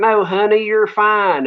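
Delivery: put-on very strong, high Southern accent laid on thick. Retelling a nice lady's reply to his worried question, in a very Southern accent. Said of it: "very southern accent".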